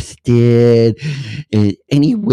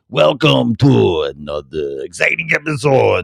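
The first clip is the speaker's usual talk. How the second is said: croaky vampire voice. Opening another episode with a frog in the throat, the host sounds like Count Dracula. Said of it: "That sounds like Count Dracula".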